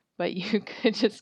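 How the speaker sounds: talking through laughter. Addressing someone about their forum contest, laughing while talking. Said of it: "I'm laughing at saying dookie".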